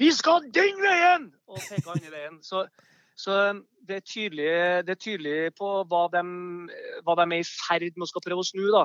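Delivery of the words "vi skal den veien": high, loud, slow scolding yell. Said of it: "Og så kjefta han og smalt".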